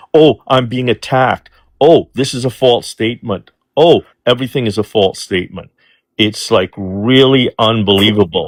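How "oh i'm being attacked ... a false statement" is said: ordinary delivery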